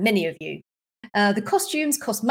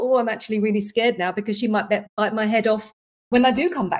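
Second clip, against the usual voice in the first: ordinary talk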